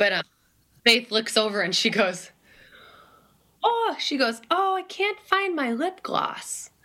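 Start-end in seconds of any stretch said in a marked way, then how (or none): 3.6-6.7 put-on dainty voice, much higher and slower. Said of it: "she had this little dainty voice".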